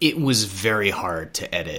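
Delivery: ordinary delivery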